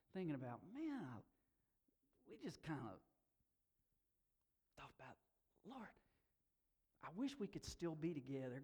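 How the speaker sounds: choked up, on the verge of tears. Recalling a friend calling him his lifelong prayer partner, on the verge of tears. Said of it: "I'm about to start crying now".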